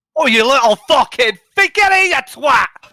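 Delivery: shouting. Shouting in character while chasing someone down a path: shouting. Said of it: "what do you shout, Haldir?".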